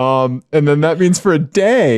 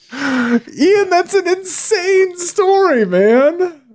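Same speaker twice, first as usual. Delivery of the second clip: voice pushed way up, much higher pitch. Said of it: "Your voice gets so high".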